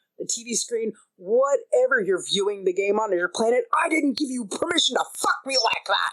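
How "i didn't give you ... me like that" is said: put-on indignant, affronted outburst. Acting out a game moment, imitating yelling at the screen. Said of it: "yelling at the computer monitor".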